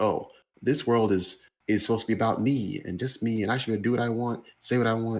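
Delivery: ordinary delivery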